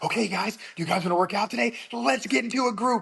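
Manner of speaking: very high, exaggerated, excited children's performer voice. Showing how they talk to the kids in class: imitating an exaggerated, excited voice. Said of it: "everything's exaggerated and excited".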